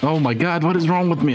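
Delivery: frazzled, self-exasperated, high, flustered panic. Restarting a level after failing it again, panicking. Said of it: "I'm panicking, I'm panicking".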